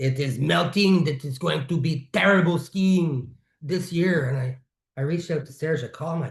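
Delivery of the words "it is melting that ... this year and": put-on French accent, best effort. Quoting Serge's Facebook post about the glacier, in Serge's French accent. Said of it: "I'm doing my best French accent".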